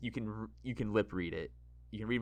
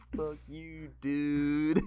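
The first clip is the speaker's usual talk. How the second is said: loud surfer-bro voice, "dude" drawn out; 6 semitones higher, 5 dB louder than usual. Telling a friend how he said the line earlier: imitating a surfer bro. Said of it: "You said it like like almost like a surfer bro".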